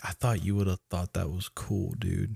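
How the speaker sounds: let-down, beaten, defeated, deflated tone. Retelling a film scene, imitating Charlie sounding defeated. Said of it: "I love Charlie's, like, defeated".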